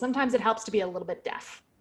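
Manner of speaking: ordinary talk, nothing marked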